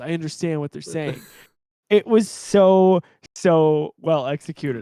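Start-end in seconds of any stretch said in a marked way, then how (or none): 0.0-1.2 fast, flat, level monotone with no color. Retelling a scene from the show, Din Djarin's very monotone voice. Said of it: "with his very monotone voice just says".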